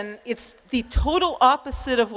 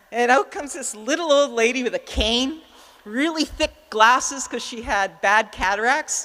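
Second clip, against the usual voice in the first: ordinary delivery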